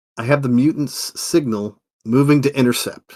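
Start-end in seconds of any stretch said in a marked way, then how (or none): none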